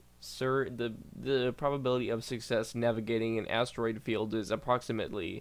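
usual speaking voice

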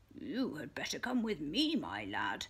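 deep, gruff, rough, merry chuckling voice. Narrator reads a man speaking to little Robin, gruff, jolly chuckle. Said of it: "chuckled a gruff, jolly voice".

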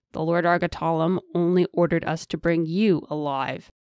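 plain reading voice

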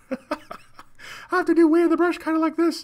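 very high, loud, squeaky voice. Joking his voice might change a couple octaves, in a Mickey Mouse-like voice. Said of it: "Kind of sounded like Mickey Mouse".

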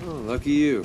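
sarcastic, clearly not meant, quippy delivery. Replying to a robot that says it cannot fit through the door: sarcastic. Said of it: "I detect sarcasm".

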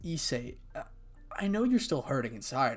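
plain reading voice

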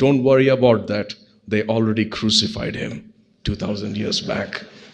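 very quiet, hushed aside. Retelling a man's reply at the back of an elevator: imitating a man speaking quietly. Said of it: "a man very quietly said".

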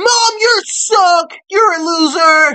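put-on very high, very loud, shrill teenage yelling. Reacting to a report on teens, imitating a teenager: imitating a teenager yelling at mom. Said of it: "that's how they be".

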